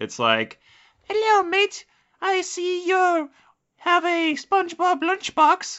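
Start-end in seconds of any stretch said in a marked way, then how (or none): 1.0-5.8 put-on very high, slow small-child voice. Acting out a menacing kid, in a young kid voice. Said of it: "they would have that kind of voice because these aren't like 17 or 18 year olds".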